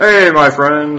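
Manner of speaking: put-on tipsy drunk voice, very loud and high. Greeting a guard who spotted the character: acting drunk. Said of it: "I'll, like, act drunk".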